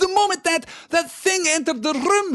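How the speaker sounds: very high, shrill, loud, drawn-out scream. A professor points at the Minister of Magic, screaming. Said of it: "she screamed".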